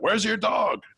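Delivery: put-on yelling, high.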